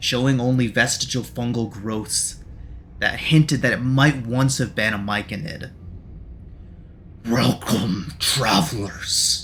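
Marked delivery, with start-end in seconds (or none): 7.2-9.4 bubbling, sputtering, gurgling, spitting monster voice. Narrating a bloated fungal creature greeting the travelers, gurgling, spitting creature voice. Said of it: "The aberrant myconid's voice gurgles and spits".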